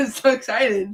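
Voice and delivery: acted loud, dry, obviously insincere sarcasm. Responding to a comment read out about AJ, sarcastic. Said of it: "You hear that sarcasm? That's sarcasm, though".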